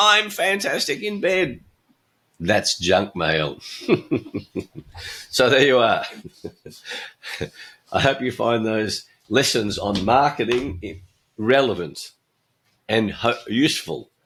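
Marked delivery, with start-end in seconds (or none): 0.0-1.6 very high shout at the top of the lungs. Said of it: "shout at the top of your lungs".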